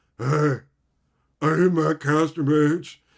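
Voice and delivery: put-on loud, drawn-out, clueless dumb voice. Retelling surprising someone at a convention: imitating a clueless fan. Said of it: "I wanted to sound like some chud fucking idiot".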